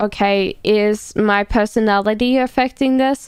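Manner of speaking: ordinary delivery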